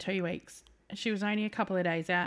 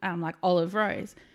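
ordinary talk

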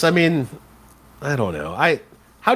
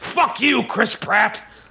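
play-acted bitter voice; 7 semitones higher than usual. Acting out a joke movie ending as the rocket launches: imitating Harrison Ford screaming. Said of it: "Harrison Ford just screams".

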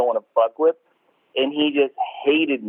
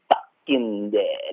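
each word of "fucking dead" hammered with hard stress; 3 semitones lower, 4 dB quieter than usual. Retelling the boss's refusal again: imitating emphasis on fucking dead. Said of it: "He wanted to emphasize it".

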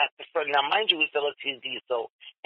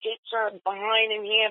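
small, high, mild female scream; 6 semitones higher than usual. Telling about a lady standing at the metal gates, imitating a woman screaming. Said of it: "and she's screaming".

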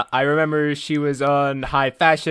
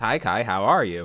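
mechanical, machine-like voice; 6 semitones lower, 5 dB quieter than usual. Greeting the other host at the start: robot voice. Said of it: "Why did you sound like a robot?".

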